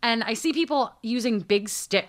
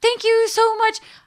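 put-on very high, loud, squeaky grateful old lady voice. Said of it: "she has this high-pitched little voice".

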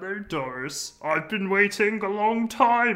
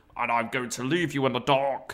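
put-on strained voice, lower; 3 semitones lower than usual. Quoting a man reminding viewers at home of the scenario, in a Mr. Bean voice. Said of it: "doing this fucking Mr. Bean voice".

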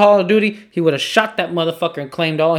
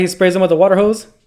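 ordinary talk

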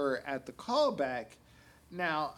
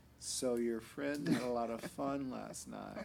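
mock soft-spoken monotone male voice, lower and quieter; 5 semitones lower, 5 dB quieter than usual. Retelling what a box office manager said: imitating a soft-spoken monotone man. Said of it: "very monotone kind of personality".

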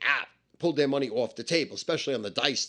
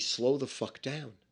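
hushed half-whisper, right into the ear; 6 dB quieter than usual. Retelling words half-whispered to the speaker during a hug: imitating a half-whisper. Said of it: "but always whisper to me".

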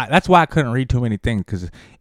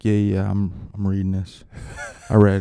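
put-on somber athlete voice, pitched lower; 3 semitones lower than usual. Retelling a press conference, imitating somber LeBron James. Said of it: "He's all, like, somber".

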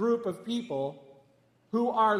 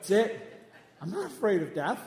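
ordinary talk

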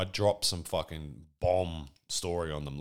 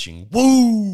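loud, long, high, drawn-out failed woo; 16 dB louder than usual. Announcing a made-up documentary title with a failed Ric Flair woo. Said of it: "voice to do the Ric Flair woo today".

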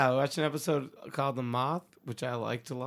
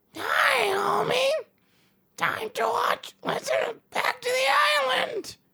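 loud, high-pitched cartoon mother voice; 5 dB louder than usual. Doing an impression after another speaker suggests Marge Simpson: Marge Simpson voice. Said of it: "What about Marge Simpson?".

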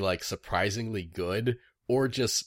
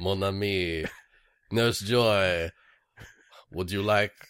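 put-on fake Louisiana accent; 2 semitones lower than usual. Playing Gambit as Brock in a comedy bit, bad Cajun accent as Gambit. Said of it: "I don't know what accent that was, but it was not Cajun".

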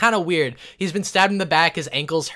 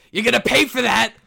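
furious, threatening yell, high and rough; 7 semitones higher, 5 dB louder than usual. Narrating the scene to the player Ander, Kenny yelling. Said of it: "and then he yells".

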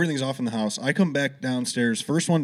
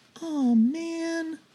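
put-on very high tiny child's voice, drawn-out man. Retelling a voice heard behind the ear after a missed note: imitating a little kid's voice. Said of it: "a little fucking kid's voice was like".

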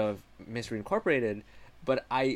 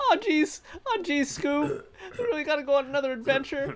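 put-on voice, very high and loud; 4 dB louder than usual. Riffing on a Scooby-Doo crossover, one speaker does a Morty voice. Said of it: "Now it sounds like Morty".

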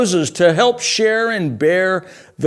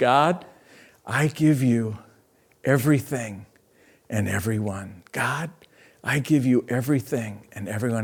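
hushed, repeated half-whispered murmur; 7 semitones lower, 8 dB quieter than usual. Showing listeners how to pray the repeated surrender prayer: half-whispered prayer. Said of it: "It's just a whisper prayer that I repeat".

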